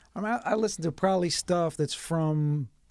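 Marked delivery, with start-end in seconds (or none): none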